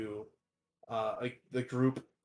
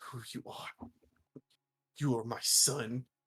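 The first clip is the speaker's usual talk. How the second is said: sobbing while speaking. Voicing a dying mentor's last words to the protege: dying mentor sobbing. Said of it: "Grint's, like, sobbing".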